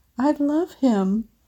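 shaky whisper. Reading a post aloud where a three-year-old speaks: shaky whisper. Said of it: "then whispers, his voice shaky".

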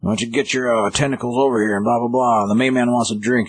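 put-on grouchy, bossy, grumpy tone, pitched high. Retelling a comic scene where a grumpy character yells at the bartender: imitating a grumpy yell. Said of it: "He's yelling at the bartender".

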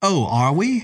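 offhand, flip. Told by O'Malley not to be so flip, Elizabeth answers with a flip retort. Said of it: "Retorted Elizabeth".

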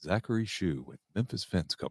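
low radio announcer voice.

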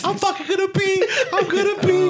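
very high, weepy, tearful crying voice. Telling a friend how his wife reacted, imitating his wife crying. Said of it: "my wife was like crying".

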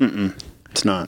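ordinary talk

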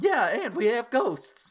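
exaggerated, very high-pitched, loud Italian accent. Speaker wondering whether other wizarding schools have ghosts, voicing Albus Dumbledore: Dumbledore voice sliding into Mario. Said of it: "dangerously close to a Mario voice there".

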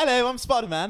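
put-on British accent. Joking around, pretending to be spider-man: put-on british accent. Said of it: "British accents are hard".

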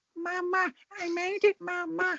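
put-on high, squeaky, very high little baby voice. Speaker retells a clip's line the way the man said it, imitating a baby's voice. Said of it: "a baby's accent".

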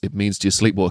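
put-on muttering under breath. Retelling how someone quietly asked a question: muttering under breath. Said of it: "under his breath".

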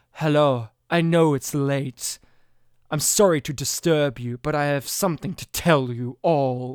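very low, sinister, polite voice. Retelling how a visitor knocks late at night: imitating sinister Giancarlo Esposito. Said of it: "he's very sinister. He's like".

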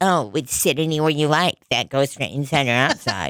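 sneering, mocking imitation.

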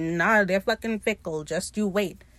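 plain

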